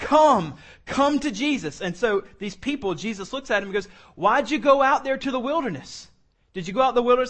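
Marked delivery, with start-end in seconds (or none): 4.1-7.3 put-on sarcastic tone, higher and louder. Retelling how Jesus questions the people: imitating Jesus's crazy sarcasm. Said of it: "throwing some crazy sarcasm".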